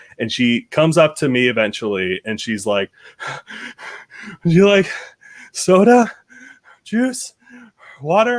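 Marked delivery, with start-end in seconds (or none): 4.4-8.4 very high, strained, barely composed. Recounting a woman offering drinks, imitating someone barely holding together. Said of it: "she's barely holding it together".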